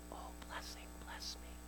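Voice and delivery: barely-there, very soft whisper. Showing the wrong way to pray Jabez's prayer: speaking very softly. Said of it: "Jabez spoke very softly to the Lord".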